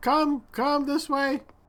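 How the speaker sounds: very high, far-off sounding shout, calling out. Game master voicing a creature calling the players toward it, shouting from afar. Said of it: "in Draconic sort of shouting in your direction".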